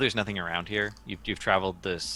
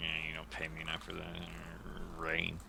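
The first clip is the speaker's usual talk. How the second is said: very quiet, hushed, grumbling complaint under the breath; 2 semitones lower, 12 dB quieter than usual. Voicing a guard who complains about the rain: guard grumbling. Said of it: "Guard sort of grumbles".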